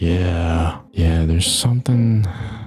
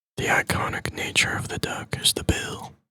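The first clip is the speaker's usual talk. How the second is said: soft, breathy whisper, half to oneself; 7 dB quieter than usual. Talking to Psyduck while cutting, whispering. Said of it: "I don't know why I'm whispering that".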